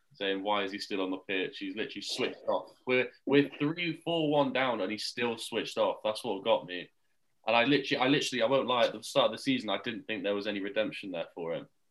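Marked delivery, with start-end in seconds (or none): none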